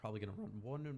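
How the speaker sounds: voice breaking, cracking mid-line. Speaker tells viewers what comes next in the game, voice cracking. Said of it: "voice crack".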